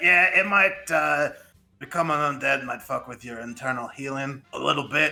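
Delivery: scratchy put-on character voice. Voicing Super Meat Boy, who will teach the spell: scratchy Super Meat Boy voice. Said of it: "This voice really hurts my throat. It's getting scratchier".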